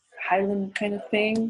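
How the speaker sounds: normal talking voice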